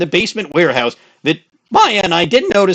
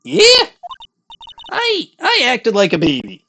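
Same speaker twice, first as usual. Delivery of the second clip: put-on very high, sing-song, swooping old-lady voice; 9 semitones higher than usual. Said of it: "saying in my old bag voice".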